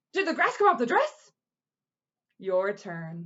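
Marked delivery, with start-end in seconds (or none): 0.1-1.3 high, fast-talker patter, words rattled off quickly. Dictation lesson, reading a sentence very fast, like a fast talker. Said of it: "Like a fast talker".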